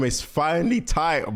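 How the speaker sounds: voice breaking mid-phrase. Opening a lore video at last, voice cracking. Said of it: "Why did my voice crack?".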